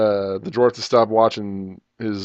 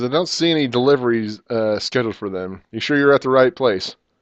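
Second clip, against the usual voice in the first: ordinary talk, nothing marked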